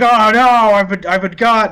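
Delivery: screaming cry. Voicing a character who has just been shot in the heart: NPC screaming after being shot.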